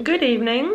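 talking with mouth full. Greeting viewers after a big bite of rice cake, talking with mouth full. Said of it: "I decided to take a giant mouthful of".

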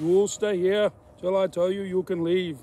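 put-on loud, booming Austrian-accented action-hero voice. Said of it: "Sorry, I sound like Schwarzenegger".

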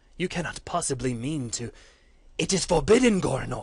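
very loud, aghast, horrified outcry. Reading a story, Geron sees Goranor's veins glow and protests; horrified. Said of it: "then to complete horror".

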